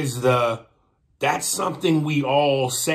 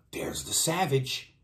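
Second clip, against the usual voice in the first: put-on gasp, quieter; 2 semitones higher, 7 dB quieter than usual. Retelling how the room reacted: imitating a gasp. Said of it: "They almost gasped like".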